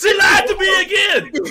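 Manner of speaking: high, loud, wailing, crying shout.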